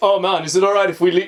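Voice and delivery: put-on Jamaican patois accent. Retelling a show character's reply to Pitsy, in an imitated Rasta accent. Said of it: "He's Rasta as well".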